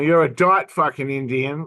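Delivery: ordinary delivery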